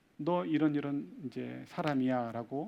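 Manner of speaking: ordinary talk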